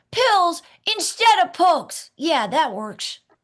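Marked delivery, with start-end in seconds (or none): 0.2-2.2 very high, loud, boyish cartoon little boy voice. Trying a suggested line again in the role: Dennis the Menace voice. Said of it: "let me try again".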